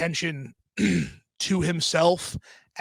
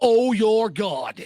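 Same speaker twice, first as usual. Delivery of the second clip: put-on British chef voice, higher; 5 semitones higher, 3 dB louder than usual. Retelling what a friend said in a put-on voice: Gordon Ramsay voice. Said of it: "What the fuck, Gordon Ramsay?".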